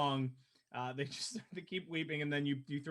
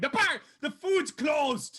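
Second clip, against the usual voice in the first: gruff, very high, slow, drawn-out call; 12 semitones higher, 9 dB louder than usual. Recalling asking for food, answered by Sybil: gruff Sybil voice. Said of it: "you get the gruff voice of Sybil going".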